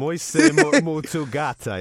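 loud, awful, clumsy Portuguese accent. Man repeating a portuguese phrase he was taught to say to a woman, awful portuguese accent. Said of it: "your accent's awful".

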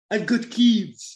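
botched St Lucian accent attempt. Quoting what a man said, attempting Darren Sami's accent. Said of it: "I can't do the Darren Sami accent".

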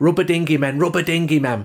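put-on strong Mancunian accent. Recalling what Kiddo said after a defeat, Kiddo's strong Manchester accent. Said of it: "in a really strong Manchester accent".

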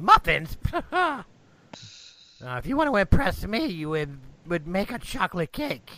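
put-on hunchbacked little old man voice, swooping pitch. Game master answering the baker's offer of muffins: little old man voice. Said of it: "standing there is a little old man who's hunchbacked and hands are kind of gnarled. / standing there is a little old man who's hunchbacked and hands are kind of gnarled. And when he looks at you, you".

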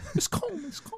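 teasing mock bro voice, squeaky, very high, soft.

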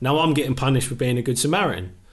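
ordinary talk, nothing marked

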